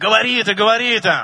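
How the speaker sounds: put-on shouting. The speaker retells in Russian what a man screamed in his ear; retelling a shout. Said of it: "А он мне кричит в уши".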